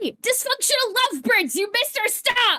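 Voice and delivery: calling out, projected across distance. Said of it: "starts calling out".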